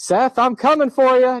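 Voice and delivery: very high-pitched, loud shout. Retelling how a coworker shouted down the hallway: imitating Doctor Lewis shouting. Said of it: "And then he shouted".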